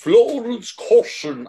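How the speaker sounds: put-on poor English accent. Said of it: "trying to put on, like, an English accent".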